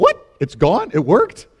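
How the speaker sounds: mock stunned disbelief, loud and swooping. Recounting how a man reacted after praying for the speaker's headache, mock surprised disbelief. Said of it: "He was surprised".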